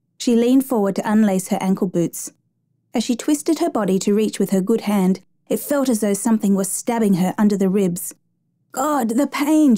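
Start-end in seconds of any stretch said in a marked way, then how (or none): 8.7-9.8 groaning through the pain. A passenger on a flight, hurting under her ribs, speaks; groaning in pain. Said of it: "she groaned, clutching her side".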